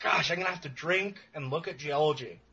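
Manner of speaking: play-acted, ironic, sarcastic, put-upon grumbling. Retelling own words about drinking and geology research: retelling own sarcastic remark. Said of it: "That was entirely sarcasm".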